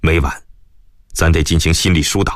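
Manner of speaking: plain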